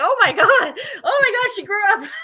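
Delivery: high, loud, laughing, shocked disbelief.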